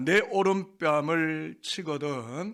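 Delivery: slow, drawn-out, stretched delivery. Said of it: "한번 따라하겠습니다".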